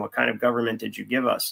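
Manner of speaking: ordinary talk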